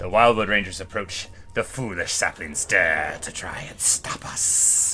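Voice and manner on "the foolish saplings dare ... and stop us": slow, hissing whisper. Voicing the tree character Drika as the battle starts: Drika's hissing voice. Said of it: "she hisses even though she's a tree".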